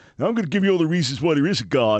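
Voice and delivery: put-on loud, fast, high-pitched New York accent. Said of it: "But you get a New Yorker like me".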